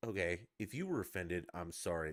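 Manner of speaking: put-on talking-down, dismissive, condescending voice. Retelling Tiger's apology to offended people: imitating a condescending apology. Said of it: "he said it so condescendingly".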